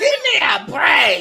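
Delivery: very high, very loud, shrill, acted fed-up outburst. A father recounts his three-year-old daughter in the car: imitating Mila's road rage. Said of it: "My wife has road rage, and Mila mimics her".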